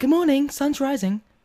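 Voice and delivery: mellow, gentle, slow, high-pitched tone. Imitating a friend as a bunkmate's alarm: imitating a friend's soft voice. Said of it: "his alarm would be like".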